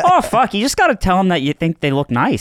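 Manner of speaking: unconvincing, missed attempt at a Canadian accent.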